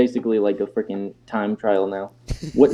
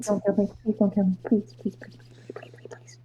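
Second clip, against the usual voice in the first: hushed, frightened, begging whisper; 10 semitones higher, 10 dB quieter than usual. A character held silent under someone's hand, whispered pleading. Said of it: "And he's just whispering this".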